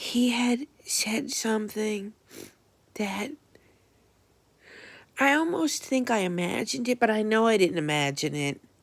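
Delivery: crying, tearful voice that catches and chokes up. Telling about a conversation about rents, now tearful and choked up. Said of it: "now I'm crying and getting choked up".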